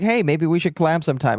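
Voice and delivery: plain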